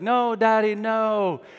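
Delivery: put-on acted, high, loud, wailing, crying child voice. Retelling a child's plea at the first preschool drop-off: imitating a crying child. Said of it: "and she was crying, and she was like".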